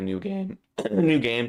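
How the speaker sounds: voice cracking and breaking up. Speaker who just woke up, discussing a game announcement, voice cracking. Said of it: "Sorry, voice cracking".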